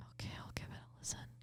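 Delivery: speaking in a whisper. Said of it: "Why are we whispering?".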